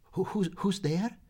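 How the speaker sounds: quavering voice. Narrator reads a character trying to show pluck at a door, quavering voice. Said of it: "in a quavering voice asked".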